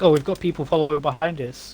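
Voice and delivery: ordinary talk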